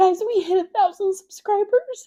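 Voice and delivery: choked up with happy tears. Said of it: "you can already hear it in my voice".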